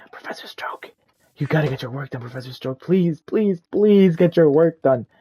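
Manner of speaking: hushed, pleading whisper under the breath. Retelling what a woman whispered to them in class: imitating a whisper. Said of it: "she's like whispering to me".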